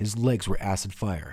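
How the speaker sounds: ordinary delivery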